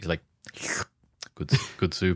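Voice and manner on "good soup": put-on, very quiet, mumbled voice, quieter. Acting out how Adam answers a pregnancy confession, imitating him saying it very quietly. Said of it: "He sounds like he's like saying it very quietly".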